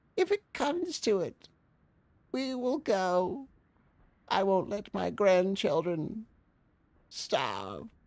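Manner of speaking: put-on elderly voice, pitched very high. Voicing a complaining sixty-two-year-old seamstress: Harriet Cleghorn old voice. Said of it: "now we can actually use the old voice".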